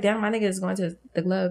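normal talking voice

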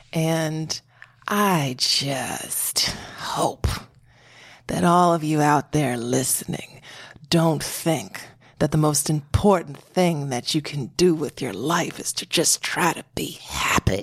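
mock disdainful tone. Retelling what a woman said to her listeners, imitating someone's disdain. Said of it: "she said it with such disdain".

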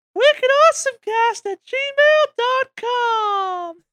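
very high, loud, deliberately bad voice. Reading out the show's email address: bad impression of Alex. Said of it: "Bad impression of Alex I'm gonna do right now".

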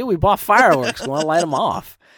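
yelling. Retelling how they yelled back at the truck driver: imitating their own yelling. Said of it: "we kinda yelled at him".

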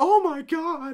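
very high, loud, womanly voice. Retelling a show scene where Marie reacts: womanly Marie voice. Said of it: "all womanly".

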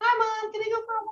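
goofy put-on dog voice, very high and fast. Speaker shows the voice they use when talking as him to mom, silly voice. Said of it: "give him a silly voice".

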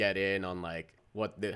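ordinary talk, nothing marked

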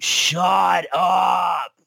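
creaky, strained scream.

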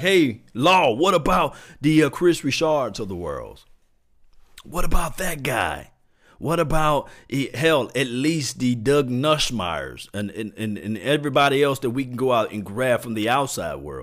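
ordinary talk

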